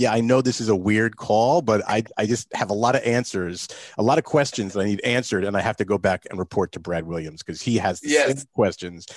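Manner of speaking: plain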